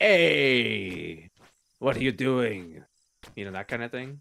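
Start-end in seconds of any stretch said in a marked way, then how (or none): 0.0-2.8 very loud, slow bug creature voice, stretched "hey". Describing a big bug-looking creature to the group, doing a Watto voice. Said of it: "He sounds sort of like".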